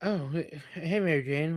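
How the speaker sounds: slow, drawn-out, lisp-like s sounds, never quite lisping. Describing how Maguire talks as Peter Parker: imitating his near-lisp. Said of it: "it's like he's got a lisp, but he doesn't have a lisp".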